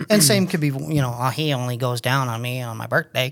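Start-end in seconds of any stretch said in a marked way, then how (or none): 1.2-3.3 strong, put-on Southern drawl. Imitating what some people say: imitating a Southern accent. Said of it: "Why are they both very Southern?".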